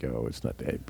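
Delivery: laid-back, bashful, hushed half-whisper. Retelling his own reply to a nosy question: imitating himself, chill and bashful. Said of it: "I'm being real chill, real cool, real bashful".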